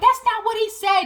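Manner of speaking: put-on furious, high-pitched screaming. Retelling what someone screamed back during an argument, retelling someone screaming. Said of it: "Margaret is like screaming like".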